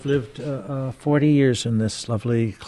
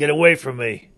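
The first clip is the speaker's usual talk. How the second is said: grumpy puppet voice, pitched higher; 4 semitones higher, 4 dB louder than usual. Puppeteer introduces the second character he plays, in Oscar the Grouch voice. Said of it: "And Oscar the Grouch".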